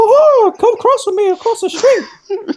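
squeaky voice pitched way up high. Describing how the game mouse Mappy talks, Mickey Mouse voice. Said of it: "Mappy have like the Mickey Mouse voice".

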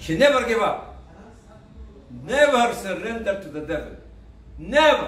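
strong, forceful declaration. Telling a life story to listeners, in a very strong voice. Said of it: "I'm just saying it with a very strong voice".

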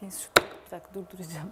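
quiet, breathy, barely voiced murmur.

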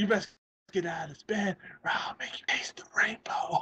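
soft, breathy whisper under the breath. Retelling the scene again, lifting the covers: imitating Madea whispering. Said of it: "fucking just whispers it".

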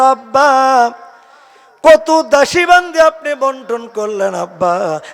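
high, loud calling out.

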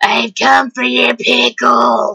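rough, creaky, spooky voice. The speaker says he'll talk like this for the rest of the video: Grim Reaper voice. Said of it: "I'm gonna talk like this".

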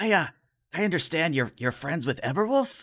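nervous, uneasy character voice. Voicing a small character who fidgets under a player's gaze: nervous fidgeting character. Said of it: "he starts to fidget a little under your gaze and says".

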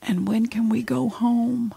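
mock whispering. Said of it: "he's whispering because he had a tube".

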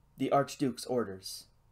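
plain

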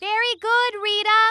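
shouting. Answering a friend who has gone a little deaf: shouting. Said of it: "you don't have to shout".

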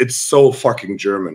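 ordinary talk

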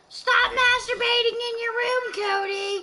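very high, shrieking, scolding grandma scream. Acting like a grandma screaming upstairs at cody: imitating cody's grandma screaming. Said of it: "And so I was acting like his grandma".

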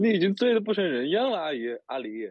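put-on heavy broken Mandarin accent. Acting a two-person drinking scene: plastic Mandarin accent. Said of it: "我说塑料普通话".

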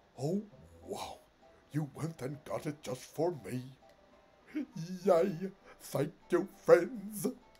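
big, loud put-on character voice. Reading a game's dialogue aloud and doing the voices: Wigglytuff voice. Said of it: "doing the voice".

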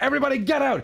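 very high-pitched cartoonish voice. Comparing another player to a cartoon boss: Mister Krabs voice. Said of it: "You're like Mister Krabs".

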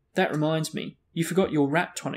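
ordinary delivery, nothing marked

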